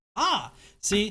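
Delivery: ordinary talk, nothing marked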